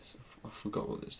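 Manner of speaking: breathy, barely voiced, unsure whisper. Trying to recall a Pokemon's evolution, trailing off: whispering. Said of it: "You're just whispering".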